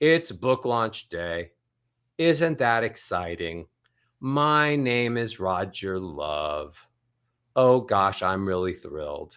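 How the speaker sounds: pitch stepping down through each phrase, low and falling. Showing listeners the pattern most of them use, on book launch day, speak in descending scales. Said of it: "most of you use descending scales".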